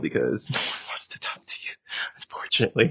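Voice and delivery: breathy, laughing through the words. Admitting a hard truth about men and dating, laughing while talking. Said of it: "I'm laughing to say that".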